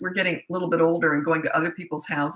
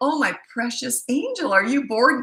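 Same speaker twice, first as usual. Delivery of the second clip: mock sugar-coated, syrupy sweet, pitched-up mommy coo; 7 semitones higher than usual. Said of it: "looked down at him and smiled".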